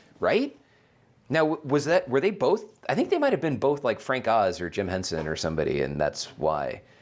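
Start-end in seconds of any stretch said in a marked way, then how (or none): none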